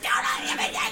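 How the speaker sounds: breathy whisper, voice gone, just breath. Retelling a wrestling match, imitating Joey Styles losing his voice. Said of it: "loses his voice and goes".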